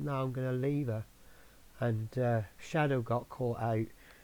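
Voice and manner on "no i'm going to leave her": ordinary talk, nothing marked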